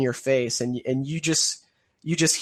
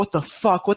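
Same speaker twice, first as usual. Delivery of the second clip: screaming, yelling, much higher pitch; 5 semitones higher than usual. Acting out a man waking up suddenly and trying to escape, screaming. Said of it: "he wakes up and he's screaming".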